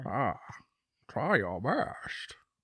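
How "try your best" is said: slow, drawn-out put-on Scottish film-star voice. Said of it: "Your Connery".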